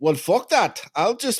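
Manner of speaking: put-on South African accent, pitched very high. Imitating rich heirs brushing off their fathers' money: put-on south african accent. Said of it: "I don't know what accent I'm doing".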